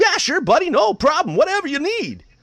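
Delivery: play-acted bright and eager, very high, very loud. Retelling how a baseball player answered an interview request: imitating a chipper reply. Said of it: "it was just so chipper and, and nice".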